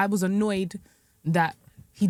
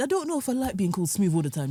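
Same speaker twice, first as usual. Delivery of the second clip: usual speaking voice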